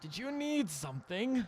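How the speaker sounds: put-on elderly halfling character voice. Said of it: "not when you sound like that".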